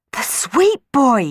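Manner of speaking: high, loud shouted yell. A girl calls out on hearing a voice from the chimney, yelled. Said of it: "yelled Juliet".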